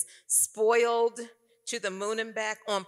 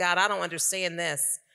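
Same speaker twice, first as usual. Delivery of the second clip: sobbing and crying, pitched much lower; 3 semitones lower than usual. Recalling crying out to the Lord in a room full of people, retelling a sobbing prayer. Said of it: "I'm crying and sobbing and saying".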